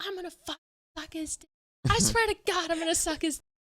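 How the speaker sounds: put-on, furious, storming angry outburst. Retelling a friend storming around angry: imitating someone furious. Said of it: "she got really pissed off at him".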